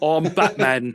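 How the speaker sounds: loud, booming, put-on British accent. Joking that one might as well use a British accent, British-accent Batman. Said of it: "might as well just do a British accent".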